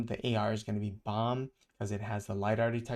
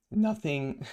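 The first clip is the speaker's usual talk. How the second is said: cracked voice breaking partway through; 4 semitones higher than usual. Talking through a market dip and pump, voice cracking. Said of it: "Sorry, my voice cracked".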